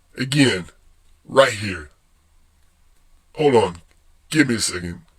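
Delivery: mock choked up, fake tearful. Joking about marriages and video games, mock choked up. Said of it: "I got a little choked up".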